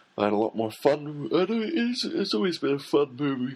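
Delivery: very high, stretched speech through a yawn. Recommending a film to viewers, yawning while talking. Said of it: "Excuse me, I'm yawning".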